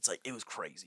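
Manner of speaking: put-on laid-back podcast-host voice. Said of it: "You have to do your Joe Rogan".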